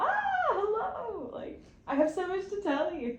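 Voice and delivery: mock very high, swooping, gushing excited kid voice. Explaining the joy of connecting, imitating an excited kid greeting someone. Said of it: "Like a kid who likes someone and is like".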